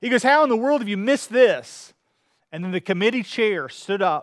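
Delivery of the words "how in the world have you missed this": mock booming, loud, excited, exuberant exclamation. Retelling a lawyer's reaction to a guilty verdict: imitating a loud exuberant outburst. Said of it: "an exuberant, loud voice".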